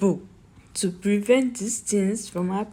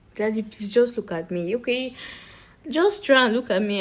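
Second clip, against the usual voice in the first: ordinary delivery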